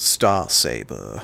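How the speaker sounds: sultry put-on sexy bedroom voice. Naming off Transformers from a case in a sexy voice. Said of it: "in the sexy voice".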